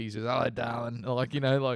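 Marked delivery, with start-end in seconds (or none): 0.2-1.0 imitated retired old man voice. Mocking a coach who has become a retired man at the pub: imitating a retired old man at the pub. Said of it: "he's turned into a sixty-five-year-old man that's been retired for six years at the pub".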